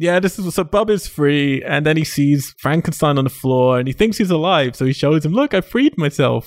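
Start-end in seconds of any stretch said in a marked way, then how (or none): 5.3-6.5 high, slow, proud tone. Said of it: "all proud".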